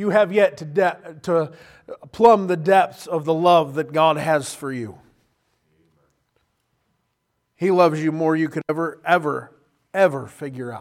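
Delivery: tearful, choking up, fighting back tears. Preaching about god's love, the speaker is holding back tears. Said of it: "I'm trying not to cry. I'm losing".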